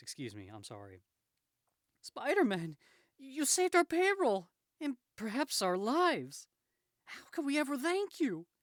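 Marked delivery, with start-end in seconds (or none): 2.0-8.4 loud, very high, swooping woman's voice. Speaker announces a woman's voice, then voices her line: put-on woman's voice. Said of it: "I'm going to do a woman's voice".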